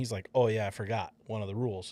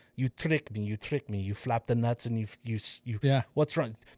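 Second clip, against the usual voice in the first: put-on, bad Russian accent. Retelling a film-set story, imitating John Malkovich's terrible Russian accent. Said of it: "his fucking terrible Russian accent".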